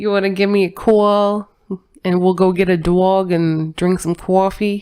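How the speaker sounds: put-on New York accent. Joking invitation for coffee in a put-on New York accent. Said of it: "That's my New Yorker accent".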